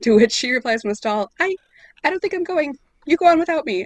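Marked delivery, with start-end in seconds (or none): 1.4-3.9 very high, small, embarrassed, mortified, caught-out voice. Retelling the scene where Hermione answers from a stall, mock-mortified Hermione voice. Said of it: "such a perfect like a oh, fuck voice".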